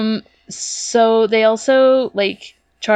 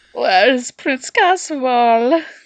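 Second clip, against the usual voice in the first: put-on fancy upper-class British accent; 4 semitones higher than usual. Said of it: "you associate royalty with British shit".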